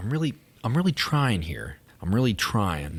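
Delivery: ordinary delivery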